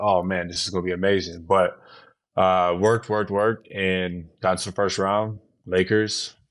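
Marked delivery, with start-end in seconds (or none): none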